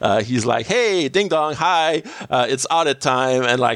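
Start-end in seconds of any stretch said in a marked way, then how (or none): 0.7-3.4 high, chipper, happy, thrilled voice. Retelling a scene where Simmons arrives for an audit: imitating Simmons, all smiles. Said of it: "all smiles, very happy to be here".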